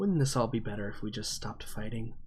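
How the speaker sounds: hushed half-whisper, very close to the microphone. Game master voicing a creature that leans over to a player's character: half-whisper in Cahill's voice. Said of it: "leans over and whispers in your ear".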